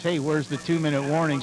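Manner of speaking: usual speaking voice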